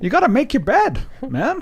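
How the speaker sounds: very high, swooping psychologist voice. Doing a Jordan Peterson impression after others ask to hear it: Jordan Peterson impression. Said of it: "That's pretty good".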